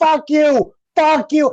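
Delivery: mock very high, stretched-out, drawn-out yelling. Retelling how they reacted at home to the movie: imitating yelling at the TV. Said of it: "I'm yelling at the T V".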